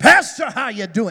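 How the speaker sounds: loud, booming camp-meeting preacher voice. Retelling a man who walked up and greeted the speaker, camp-meeting Pentecostal preacher voice. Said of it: "straight up camp meeting Pentecostal preacher".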